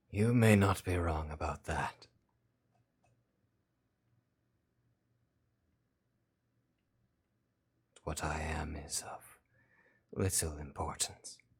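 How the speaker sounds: oddly rasping, weird made-up character voice. Voicing a character who says what it is matters little: weirdly raspy character voice. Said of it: "really weirdly raspy here".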